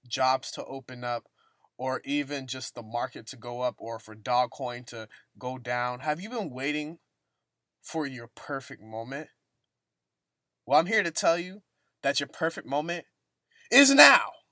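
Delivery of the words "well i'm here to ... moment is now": loud shouting. Speaking to listeners who may have this in their ear, yelling. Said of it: "Sorry for yelling in your ear".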